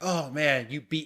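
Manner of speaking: playful mock defeated, beaten tone. Showing how one reacts when a baby smacks them: pretend defeated, playing with a baby. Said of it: "when a baby, like, smacks you, you're like".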